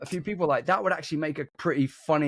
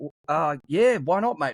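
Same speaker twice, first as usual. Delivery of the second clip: fake Australian accent, casual and laid-back. Retelling meeting an Australian in the street: imitating own put-on Australian accent. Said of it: "I just started doing an Australian accent".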